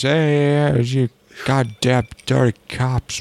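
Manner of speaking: fake Chinese accent voice. Voicing a line from an anime show, put-on Chinese accent. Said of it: "Let me give you my Chinaman voice".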